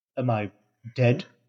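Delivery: plain reading voice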